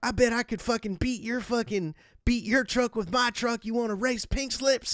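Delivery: very high, wild, crazed taunting. Retelling how his friend started taunting another guy, retelling crazy taunting. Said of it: "starts getting all crazy with the guy".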